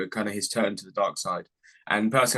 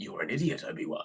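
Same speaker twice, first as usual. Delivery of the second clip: put-on gruff voice, soft, quiet and breathy; 2 semitones lower, 8 dB quieter than usual. Trying again at Qui-Gon speaking to Obi-Wan, in a gruff Liam Neeson voice. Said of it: "it's a bit more gruff".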